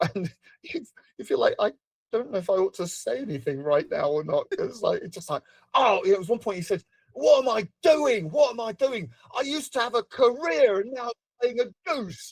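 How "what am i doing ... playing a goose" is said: mock cross, slow, high-pitched irritated tone. Acting out a man having difficulty getting a line right, imitating someone quite cross. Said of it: "he'd get quite cross".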